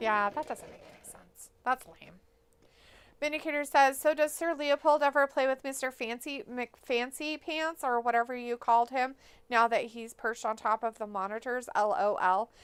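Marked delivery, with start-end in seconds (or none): none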